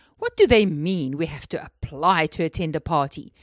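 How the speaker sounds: snorting with disgust. James reacts to a party invitation, snorting with disgust. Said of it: "James snorted with disgust".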